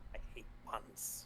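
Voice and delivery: soft whisper.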